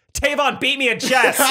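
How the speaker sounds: loud yell, high-pitched and slow. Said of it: "Isaac just yells".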